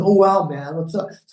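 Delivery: put-on casual American voice. Contrasting proper British speech, the speaker imitates some American. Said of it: "as opposed to some American going".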